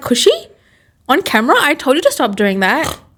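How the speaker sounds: high, swooping, sing-song scolding mum voice. Imagining mum's reaction to it being on camera: imitating mum. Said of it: "My mum is gonna be like".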